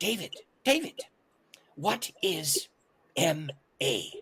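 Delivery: put-on very slow, accented speech. Retelling what a man asked him mid-story, imitating his accent. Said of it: "in his accent".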